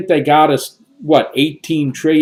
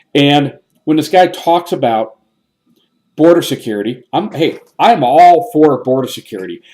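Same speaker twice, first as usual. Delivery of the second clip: ordinary talk, nothing marked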